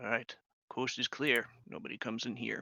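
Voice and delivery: quiet, hushed, sneaking half-whisper. Narrating a scene and speaking a character's line, half-whispering. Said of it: "He whispers".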